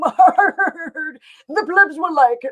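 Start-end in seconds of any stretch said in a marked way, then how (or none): 1.5-2.5 put-on old codger voice talking out of the jaw. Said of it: "who talk out of the bottom of their jaws and go".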